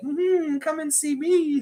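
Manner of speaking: very high, slow, drawn-out, come-hither woman voice. Likening the team to an attractive woman behind a veil: imitating an attractive woman. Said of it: "like an attractive woman".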